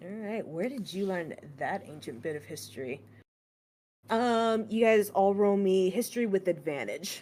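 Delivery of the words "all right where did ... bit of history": barely audible, very quiet, low murmur. Voicing a character questioning a player about an ancient spell: murmuring. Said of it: "you hear her murmur".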